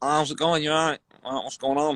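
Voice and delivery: put-on Manchester accent put on for a laugh. Retelling greeting people while pretending to be from Manchester, put-on Mancunian accent. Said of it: "I'm going to put on a Mancunian accent".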